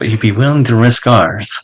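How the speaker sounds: grumbling, muttered quietly to herself as an aside. As a woman walks off, a character mutters under breath. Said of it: "mutters under her breath".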